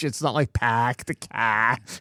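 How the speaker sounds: put-on Boston accent with dropped r sounds. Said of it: "where R becomes H".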